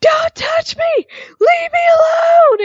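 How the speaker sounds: very high, drawn-out wailing tantrum with sobbing. Recapping a match, acting out Bayley's tantrum at the ref; imitating Bayley crying and screaming. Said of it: "she's crying and she's screaming".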